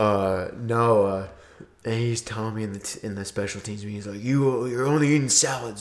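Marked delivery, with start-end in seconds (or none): 4.2-5.8 scolding, high-pitched yell. Retelling a coach in a special teams meeting: imitating the coach screaming.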